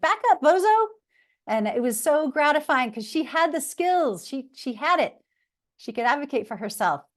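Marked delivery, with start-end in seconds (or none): 0.0-0.9 put-on small child's voice, very high and tiny. A teacher recalls a shy student's reply during an activity, imitating a student's little voice. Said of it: "in her little voice".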